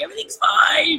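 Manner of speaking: put-on, very high, tearful crying voice. Recalling being asked what's wrong while unable to stop crying: retelling crying. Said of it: "And I'm crying".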